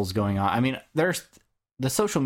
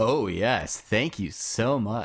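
mock-emphatic, acted-out grateful tone. Recounting taking a donation call on the phone: retelling emphatic thanks. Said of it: "and very emphatic and just like".

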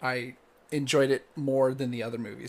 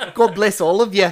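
booming, very loud, high Australian accent; 7 semitones higher, 16 dB louder than usual. Giving a deity an Aussie accent as an example, in an Aussie accent. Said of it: "just put an Aussie accent on them".

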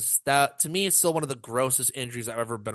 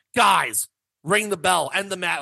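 mock yell, high and loud; 6 semitones higher, 5 dB louder than usual. Retelling a call from the sidelines to end the match: imitating Jury yelling. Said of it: "Jury yells at the ring bell".

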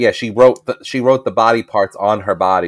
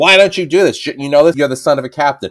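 yelling, loud and high. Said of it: "he's yelling".

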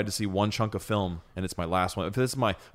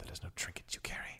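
real breathy, hushed near-whisper; 16 dB quieter than usual. Quoting a mysterious movie character's lines: imitating a breathy voice. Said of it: "He's got that real breathy voice".

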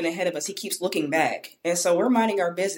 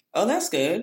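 mock offhand, indifferent, nonchalant tone; 2 semitones higher than usual. Showing how a reply to promotion news sounds: nonchalant tone. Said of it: "I sound always nonchalant".

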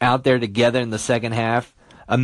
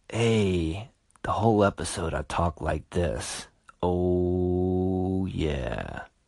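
very slow, smooth, low, hushed late-night radio voice; 6 semitones lower, 7 dB quieter than usual. Recalling recording the last episode late at night in a hotel, the speaker demos the quiet storm voice. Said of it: "had to do my quiet storm voice".

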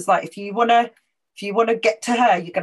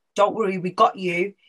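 put-on whispering. Retelling what someone behind said at a rally: imitating someone whispering. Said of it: "somebody whispered in my ear".

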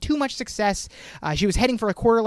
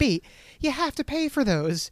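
exasperated, fed-up, long-suffering, drawn-out, higher voice; 7 semitones higher than usual. Retelling a TV scene where Serena stops Blair: imitating exasperated Serena. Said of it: "an exasperated Serena just goes".

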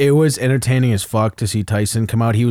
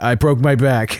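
mock insincere, fake-sounding tone. Mocking how a fighter's excuse sounded fake: imitating the fighter sounding fake. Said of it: "It sounds like he's like".

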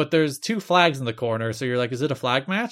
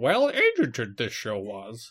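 sing-song alien voice, pitch swooping up and down; 2 semitones lower than usual. Talking about a show with a co-speaker, you turn into Yoda: Yoda voice. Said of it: "I just turned into Yoda".

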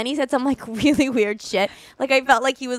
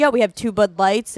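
put-on American accent. Retelling what a date said at a bar: imitating an American accent. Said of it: "so American".

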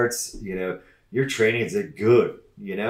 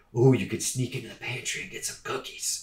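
hushed, tempting, little evil whisper; 7 dB quieter than usual. Acting out the little evil voice on your shoulder: little evil shoulder voice. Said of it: "the little evil voice on your shoulder".

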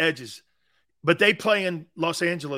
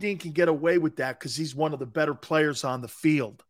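plain

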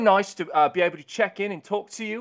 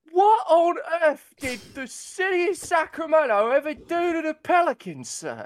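fake, higher-pitched, near-tears tearful pleading voice; 7 semitones higher than usual. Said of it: "he's getting emotional about these Pelicans".

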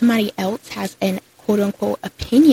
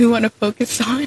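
put-on stuttering speech; 2 semitones higher than usual. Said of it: "he was stuttering so bad".

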